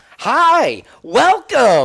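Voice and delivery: loud, shrill, swooping, high-pitched voice. Imitating a man who greets people entering a business: loud high-pitched voice. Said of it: "really loud in this high pitched voice".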